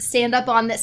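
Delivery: ordinary delivery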